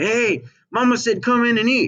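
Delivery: very high, loud calling shout. Acting out calling siblings in for dinner: shouting. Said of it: "You're gonna shout to your brothers and sisters".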